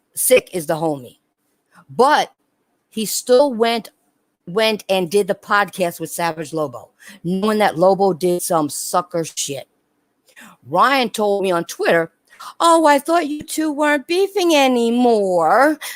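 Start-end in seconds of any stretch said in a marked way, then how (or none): 12.6-15.8 whining, complaining, pitched-up voice. Retelling a message Ryan sent on Twitter, imitating Ryan's whiny voice. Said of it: "with his whiny voice".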